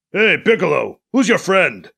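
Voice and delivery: deep, low, throaty call. A newcomer calls out to Piccolo from behind Alibi: deep, throaty voice. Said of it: "A deep, throaty voice calls out".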